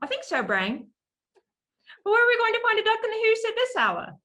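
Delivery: very high, loud cartoon voice with big swoops. Showing how the Pinky voice was done back and forth: Pinky voice. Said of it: "my Pinky voice".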